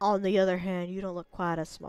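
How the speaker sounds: put-on Southern accent. Reading a line of dialogue aloud, in a sudden southern accent. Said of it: "I turned southern all of a sudden".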